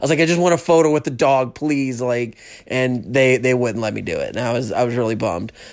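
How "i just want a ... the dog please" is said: mock pleading, begging tone. Retelling asking a lady for a photo with the dog; retelling own begging. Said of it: "I was begging at one point".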